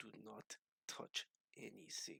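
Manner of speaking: muttering under breath. Retelling what a man said as he came out front, retelling a mutter under breath. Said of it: "under his breath".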